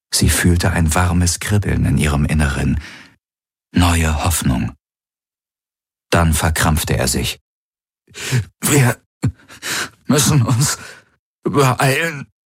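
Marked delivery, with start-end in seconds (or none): 8.6-12.2 strained, pitched-up, effortful, forced words. A man who has just tensed up speaks to her, struggling for every word. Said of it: "als würde er um jedes Wort kämpfen".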